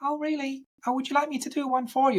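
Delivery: very high, really squeaky voice. Act out a woman answering an interviewer who praised her screaming, imitating a really squeaky voice. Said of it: "she's got a really squeaky voice".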